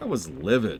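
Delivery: easygoing, lighthearted, amused tone. Recalling having been livid at the time, now said in a light, amused tone. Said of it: "I can say it with a like a lighthearted tone now".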